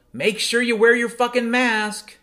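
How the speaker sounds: all-out, shrill, very high-pitched scream. Retelling stopping mid-intersection to yell at the cars: retelling screaming at cars. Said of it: "I just started screaming".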